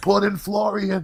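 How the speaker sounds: put-on drunken heckling yell, very high. Recounting yelling from the crowd during a boring fight, retelling a drunk yell. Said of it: "I start yelling".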